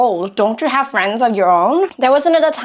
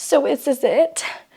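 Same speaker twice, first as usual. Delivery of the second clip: play-acted, slow, drawn-out, tearful weepy voice; 3 semitones higher, 4 dB quieter than usual. Retelling her own words after making herself cry: imitating her own past crying. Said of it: "I cried and I was like".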